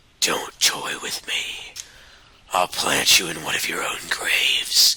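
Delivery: slow, menacing, whispered voice.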